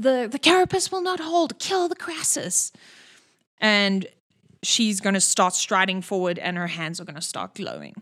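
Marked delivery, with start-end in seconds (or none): 0.0-2.7 high-pitched, commanding shout. The narrator voices a character calling to all the research assistants, shouting. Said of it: "she shouts to all the research assistants".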